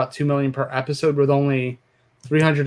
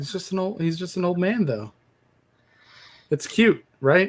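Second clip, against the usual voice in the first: mock sarcastic tone, pitched up high; 5 semitones higher than usual. Answering a complaint about an old man with a shotgun: sarcastic. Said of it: "I'm being sarcastic".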